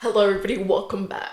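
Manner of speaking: fake angry news anchor delivery. Greeting the audience at the show's start, mock-angry news anchor. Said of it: "I was trying to give like angry news anchor".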